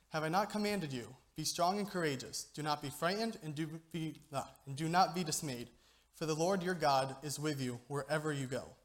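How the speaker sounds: ordinary talk, nothing marked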